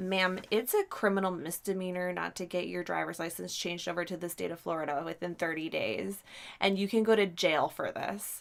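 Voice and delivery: ordinary talk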